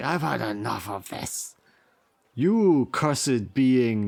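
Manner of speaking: furious, each word pushed out separately. The narrator voices a big burly Tauren across the table, angry Tauren outburst. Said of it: "slams his flagon down, and he's like".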